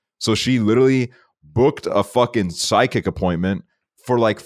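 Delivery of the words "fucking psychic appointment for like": ordinary talk, nothing marked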